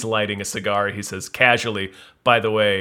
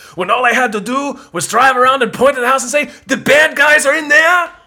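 put-on ranting voice, higher and louder; 9 dB louder than usual. Retelling a favorite movie scene to another speaker: imitating Arnold's rant. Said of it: "Arnold goes into that rant where he's like".

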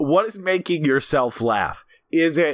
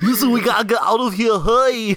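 crusty Austrian accent, pitched up; 7 semitones higher, 3 dB louder than usual. Taking turns with someone to do your best impression, put on an Arnold Schwarzenegger accent. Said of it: "Best Arnold Schwarzenegger accent".

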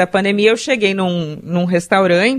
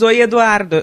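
normal talking voice

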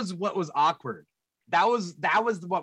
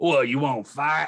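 put-on Texan Southern accent, lower pitch; 4 semitones lower than usual. Retelling what a Southern guy at a meat packing place said: imitating a Southern accent. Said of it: "we get a Southern guy at that meat packing place. He's like".

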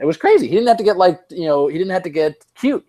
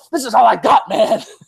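high-pitched, overexcited put-on commentator rant; 6 semitones higher than usual. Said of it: "he just started getting so excited and talking like".

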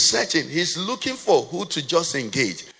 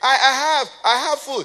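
mock boy scream, much higher, slower; 9 semitones higher than usual. Retelling a little boy calling out to others: imitating a boy screaming. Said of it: "just screamed".

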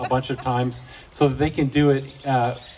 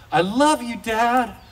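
high, loud yell. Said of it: "hearing my son yell up the stairs".

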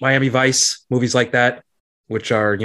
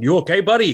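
put-on Chicago accent, higher pitch; 6 semitones higher than usual. Imagining a director checking on a fallen actor: Michael Mann's Chicago accent. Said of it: "Michael Mann going in his Chicago accent".

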